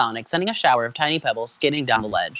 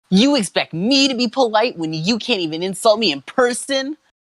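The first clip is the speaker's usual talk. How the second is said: pitched-up cartoon character voice; 9 semitones higher than usual. Reading fan fiction aloud, voicing the hero Sonic: Sonic voice. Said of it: "Oh, Sonic's voice".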